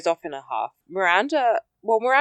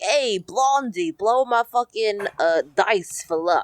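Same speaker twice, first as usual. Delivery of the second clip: put-on big tough-guy New Jersey Italian accent; 3 semitones higher than usual. Retelling a gambler's line to a blonde woman: New Jersey Italian guy voice. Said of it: "big New Jersey, like, Italian guy".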